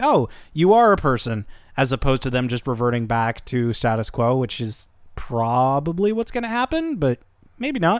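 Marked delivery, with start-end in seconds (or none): none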